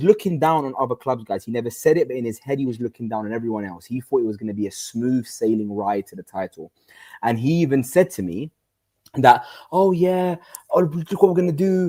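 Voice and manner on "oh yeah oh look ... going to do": smug, arrogant, cocky, full-of-himself boasting tone. Retelling what Hussam said to him: imitating Hussam being arrogant. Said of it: "And he was just being arrogant".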